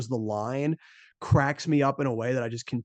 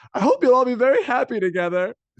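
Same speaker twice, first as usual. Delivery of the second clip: very high, loud, babyish put-on voice; 11 semitones higher, 8 dB louder than usual. Retelling a scene where he realizes he's in the water, imitating a childish voice. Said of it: "he just has that really childish voice".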